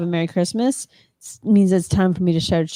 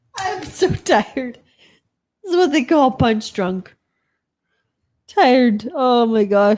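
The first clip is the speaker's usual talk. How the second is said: talking through laughter, higher; 4 semitones higher than usual. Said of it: "I just made myself laugh".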